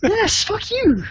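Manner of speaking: very high, loud, mock-indignant squeal.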